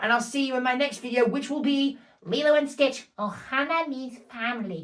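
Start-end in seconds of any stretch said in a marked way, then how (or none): 3.3-4.8 deliberately awful put-on cartoon voice. Announcing the next video's title in an awful Stitch impression. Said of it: "That's an awful Stitch impression".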